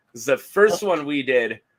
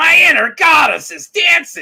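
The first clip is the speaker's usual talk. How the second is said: very high, very loud, shrill, blaring narration; 9 dB louder than usual. Describing a clip of an audiobook being read, doing a Gilbert Gottfried impression. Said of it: "it's just Gilbert like".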